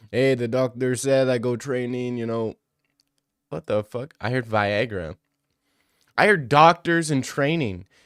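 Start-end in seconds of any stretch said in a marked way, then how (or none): 0.1-2.5 derisive, mocking put-on voice and accent. Mocking what the guest just said about his doctor: mocking imitation of the guest. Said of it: "did he just say nothing?".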